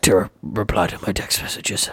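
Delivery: acted gruff action-hero voice. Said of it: "I read them in Liam Neeson's voice".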